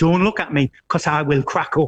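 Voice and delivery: ordinary talk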